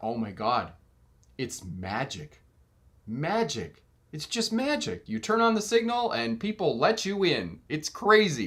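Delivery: fake awe, heavy sarcasm, swooping pitch. Recalling watching space open beside the truck, retelling sarcastic amazement. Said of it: "very sarcastic about this".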